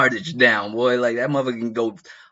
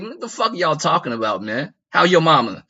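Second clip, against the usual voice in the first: put-on dismissive tone, higher; 5 semitones higher than usual. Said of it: "he's basically like".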